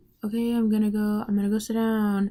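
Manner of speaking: put-on hushed speech. Retelling what a woman at the job would say after her break, imitating someone speaking quietly. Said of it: "she would say it really quietly so no one could hear".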